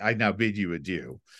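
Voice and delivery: mock sarcastic tone. Quoting a security guard seeing two guests off, retelling a sarcastic farewell. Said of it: "That's sarcastic".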